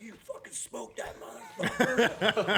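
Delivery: put-on screeching, very high, crazed, wild yelling. Retelling the moment a hunter shot an elk: retelling his own excited screaming. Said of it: "I'm screaming like crazy".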